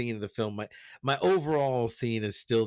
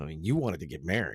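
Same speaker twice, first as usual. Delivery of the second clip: low, quick, matter-of-fact delivery. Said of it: "in this really matter-of-fact way goes".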